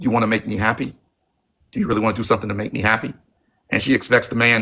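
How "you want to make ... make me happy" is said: mock seductive, sexy whisper. Acting out a line said to get money from a man: imitating a sexy whisper. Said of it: "You whisper in his ear in a sexy way".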